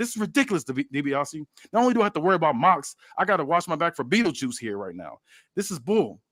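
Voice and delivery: put-on fed-up, angry griping with swooping pitch. Retelling a wrestling scene, acting out Roman Reigns getting angry: imitating an angry Roman Reigns. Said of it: "Roman's getting pissed. He's like".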